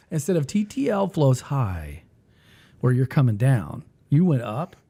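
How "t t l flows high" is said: slow, falling tune starting high. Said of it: "I went down".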